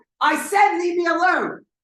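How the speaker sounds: voice rising with each word. Demonstrating telling someone to back off and leave her alone, with a raised voice. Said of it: "my voice is raising".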